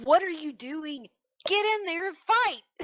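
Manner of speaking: shrill, very high-pitched shouting in a character-like voice. Voicing a character who looks up at him: character shouting to fight. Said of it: "She'll look up at him and say".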